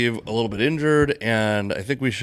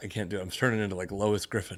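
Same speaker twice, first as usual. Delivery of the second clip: ordinary talk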